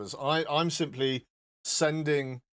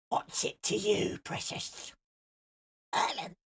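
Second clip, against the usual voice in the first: hushed, slow, breathy, drawn-out whisper; 5 semitones higher, 4 dB quieter than usual. Answering a viewer who asked for a photo without the beard, Gollum voice. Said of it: "I could also be Gollum".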